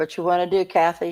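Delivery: daring, challenging, make-my-day tone. Speaking to Kathy as another person listens, in a daring tone. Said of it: "You sound almost like you're daring her".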